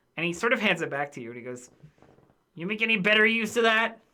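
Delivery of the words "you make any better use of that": raised, grumpy, irritable, put-out voice. Voicing a character who hands a book back: grumpy, annoyed voice. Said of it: "very grumpy and, like, annoyed about it".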